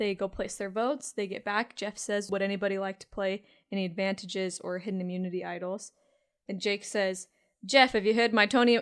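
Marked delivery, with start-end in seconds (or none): 7.7-8.8 loud, missed attempt at Boston accent. Recapping a council, give what Jake says to Jeff in a failed Boston accent as Jake. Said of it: "Why can't I do a Boston accent anymore?".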